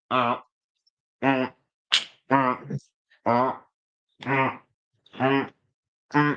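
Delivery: very slow, level, monotone robotic drone. Talking about an Aston Villa player on a podcast, robot voice. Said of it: "I was trying to be a robot".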